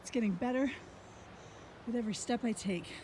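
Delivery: very quiet, breathless, panting near-whisper. Hiker stopping on a steep trail to show the view, out of breath and panting. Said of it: "I'm just going to sit here and pant".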